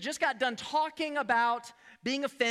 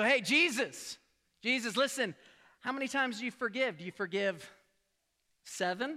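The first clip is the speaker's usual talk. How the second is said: plain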